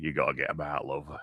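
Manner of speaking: put-on Yorkshire English accent. Retelling what the exec said to her, in a Yorkshire accent. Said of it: "talking like a Yorkshireman?".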